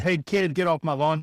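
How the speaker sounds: put-on grumpy old man voice, half-voiced grumbling. Describing hating everyone at thirty-three, quoting the lawn meme: imitating grumpy old man yelling. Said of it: "grumpy old man on the front yard yelling at kids".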